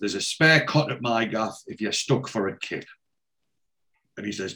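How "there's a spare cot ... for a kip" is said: usual speaking voice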